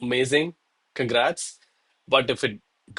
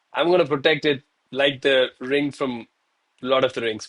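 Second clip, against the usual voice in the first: ordinary delivery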